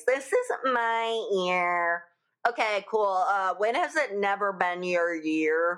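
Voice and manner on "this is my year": slow, put-on Valley Girl drawl. Imitating people who announce it is their year: Valley Girl voice. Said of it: "in the Valley Girl voice".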